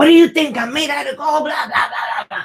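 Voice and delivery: high-pitched yelling in a woman's voice. Retelling how the mom answered her son's request: imitating mom yelling. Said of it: "mom started yelling at him".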